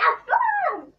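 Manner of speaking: very high-pitched, loud yell.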